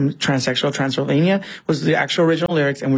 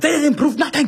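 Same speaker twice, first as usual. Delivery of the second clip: put-on very high, high-pitched German accent; 12 semitones higher than usual. Describing a character who slips, the speaker quotes his outburst: sudden German accent. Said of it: "this German accent comes out".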